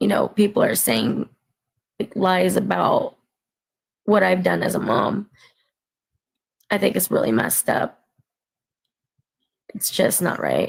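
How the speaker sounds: emotional, tearful, crying while talking. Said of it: "I'm being emotional right now".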